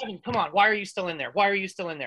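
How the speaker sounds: ordinary talk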